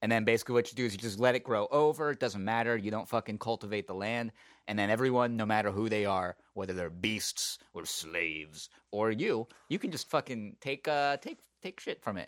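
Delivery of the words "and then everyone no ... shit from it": condescending, patronizing tone. Explaining an old law to listeners, condescending. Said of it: "So I said that pretty condescendingly".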